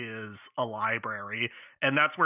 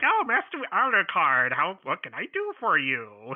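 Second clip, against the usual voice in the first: put-on high, slow, drawn-out old man voice with swooping pitch; 6 semitones higher, 4 dB louder than usual. Imitating the librarian from Castlevania Symphony of the Night greeting Alucard: Castlevania librarian voice. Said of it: "this little weird old man is just there, and he's all like".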